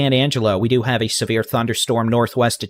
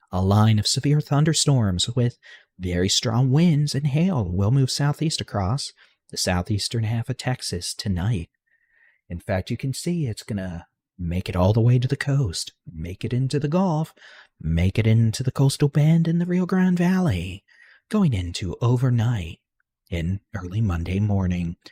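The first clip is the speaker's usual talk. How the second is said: calm, soothing ASMR voice; 5 dB quieter than usual. Explaining a severe storm forecast for Texas in a calm ASMR voice. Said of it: "we're taking this calm A S M R voice".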